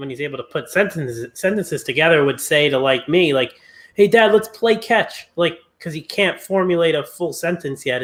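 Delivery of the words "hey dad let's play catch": put-on high, small, childlike little-kid voice. Imitating a little son asking his dad to play: imitating Luka. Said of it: "like Luka".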